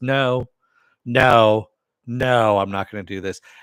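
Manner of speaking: loud, rising, snapped "no".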